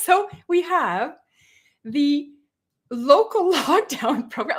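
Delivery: slow speech, laughing through the words. Reading out a government program name, laughing while talking. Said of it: "I can't even get through this without laughing".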